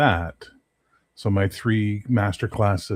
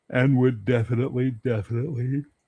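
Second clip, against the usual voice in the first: speaking through a yawn, pitched higher; 4 semitones higher than usual. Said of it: "I don't know why I'm yawning".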